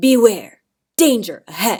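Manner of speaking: sharp, very loud delivery. Showing how to warn an audience of danger: sharp or low warning tone. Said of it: "I may use a sharp or low tone".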